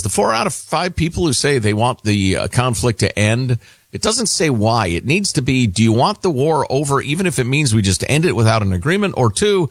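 plain

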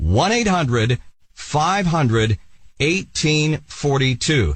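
very slow, deliberate, digit by digit reading. Repeating a phone number so viewers can write it down, very slow. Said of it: "I'm going to say it slowly so you can write this down".

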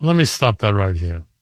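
put-on speaking with Italian accent. Retelling what a restaurant man said: imitating an Italian accent. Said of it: "the Italian accent".

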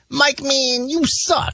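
very high-pitched, very slow, drawled voice. Repeating the line he and a friend always quoted: Sean's voice. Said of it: "in Sean's voice".

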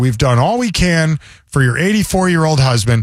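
ordinary delivery

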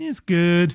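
mock sly, knowing, slyly loaded tone. Retelling how a server answered about a shake: imitating a sly remark. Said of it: "I felt like she said it in, like, a sly way".

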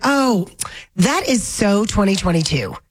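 ordinary talk, nothing marked

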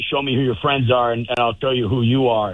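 plain

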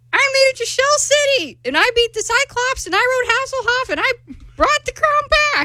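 high-pitched, all-out cartoon character voice. Auditioning by reading a SpongeBob monologue aloud: SpongeBob SquarePants voice. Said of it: "you sound like SpongeBob's grandma".

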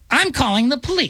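shrill, piercing, very high voice. Friends imagine how a woman might have complained, typical Karen voice. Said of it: "That just typical Karen voice".

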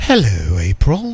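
very low, deep, sinister evil British accent. Imagining a McDonald's drive-thru greeting a customer by name, evil British accent. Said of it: "Kind of an evil British accent".

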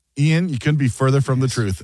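ordinary delivery

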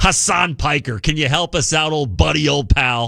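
buddy-buddy sarcasm laid on thick. Calling on a streamer to help out: very sarcastic. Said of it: "I say that very sarcastically".

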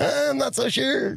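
very high, slow upper-register falsetto. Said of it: "like, in a high pitch or something like that?".

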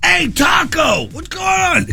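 put-on very high, shouted New York accent holler. Retelling bumping into a former coworker downtown: Dominic's New York accent. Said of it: "New York accent and stuff".

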